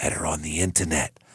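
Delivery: low, hushed, voiceless half-whisper. Retelling how an accountant answered where he met her: retelling a half-whisper. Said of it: "Whispery like that?".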